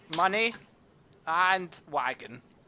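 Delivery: awkward, garbled pronunciation. Voicing a goblin who speaks broken Common, demanding money and wagon. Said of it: "speaks in, in, in rubbish common".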